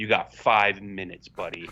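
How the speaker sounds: put-on deadpan delivery. Recounting how the listener answered a man asking to jump the line; retelling a deadpan reply. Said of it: "you looked at him like deadpan".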